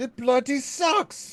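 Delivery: put-on British accent. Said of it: "the British accent".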